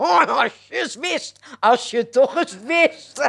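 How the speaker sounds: repeated, spoken through laughter, high and drawn out. Narrator reading a husband tickling his wife, repeating himself, laughing. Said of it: "begon lachend zijn vrouw te kietelen en herhaalde alsmaar".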